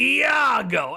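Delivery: surly cartoon voice, very high, loud, raspy, stretched out. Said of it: "So I'll go".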